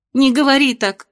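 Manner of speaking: sudden outburst. A daughter flares up at her mother's remark. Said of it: "взвилась Венделин".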